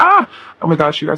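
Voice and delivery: giddy, overcome, excited gushing outburst. Talking to the audience, overwhelmed by the energy, excited yelling. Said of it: "Sorry for yelling into the mic".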